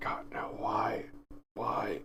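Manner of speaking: soft, exasperated mutter under the breath. A character reacts in the middle of a scene, muttered under breath. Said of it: "I'm just under my breath".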